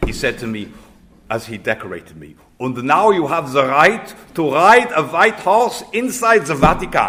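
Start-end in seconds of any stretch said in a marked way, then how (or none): 2.6-7.1 put-on heavy German accent, loud, high-pitched, belted. Quoting what the cardinal said while decorating the speaker, Cardinal Kasper's heavy German accent. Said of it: "with a heavy German accent".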